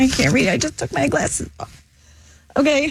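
close to tears, barely holding it together. Speaking on the air, the speaker talks near tears. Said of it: "don't cry".

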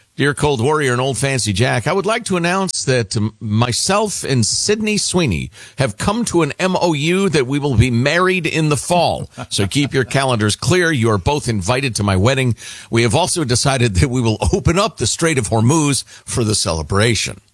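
usual speaking voice

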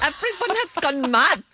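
very high-pitched, badly done English accent. Repeating a film line after a clip: imitating Al Pacino's bad English accent. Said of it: "Pacino trying to do a, a, an English accent".

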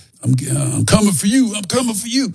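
loud movie villain voice, very high. Showing how Rocky villains talk: loud Rocky villain voice. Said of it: "they're very loud".

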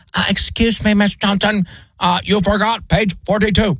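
robot voice, flat and monotone. Voicing Sally, the classroom robot, chiming in during a lesson, in a robot voice. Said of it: "That's my best robot voice".

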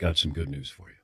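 grave, quiet, low voice.

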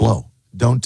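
ordinary delivery

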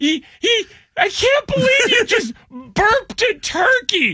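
high, slow, giggly disbelief, helpless with giggles. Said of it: "the woman who can't stop laughing".

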